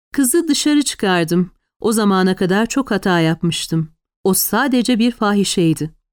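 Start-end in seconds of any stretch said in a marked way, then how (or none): none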